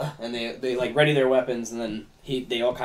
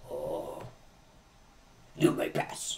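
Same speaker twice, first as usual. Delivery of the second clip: hushed, groggy, small goblin voice; 8 semitones lower, 7 dB quieter than usual. Game master voicing a small goblin opening a door, groggly little goblin voice. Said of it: "He's got a groggly little voice for such a small goblin".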